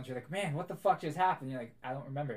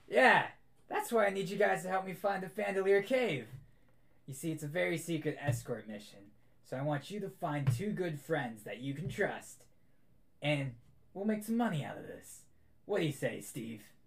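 put-on gravelly elderly dwarf voice; 3 semitones higher than usual. Storyteller voicing a dwarf character in the scene: gruff old dwarf voice. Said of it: "this gruffy old dwarf talking".

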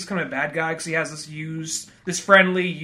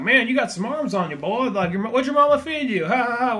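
high-pitched, chummy, pally, friendly voice; 6 semitones higher than usual. Retelling a movie villain chatting up a bouncer: imitating Bama McCall acting friendly. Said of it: "just being all friendly, like".

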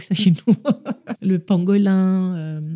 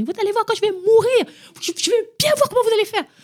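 shrill, very high, fed-up exasperated yelling. A mother acting out what she shouts at her kids after shopping: acting out shouting at her kids. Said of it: "je vais crier".

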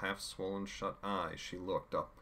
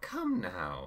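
bright, raised, cheery chiding tone; 5 dB louder than usual. A narrator reads a character's reply to a bleeding woman, cheery. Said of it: "Chaos said in a cheery reply".

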